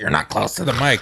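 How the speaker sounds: loud, yelled, scolding tone. Retelling being told off about the mic: imitating someone yelling. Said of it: "Then I get yelled at".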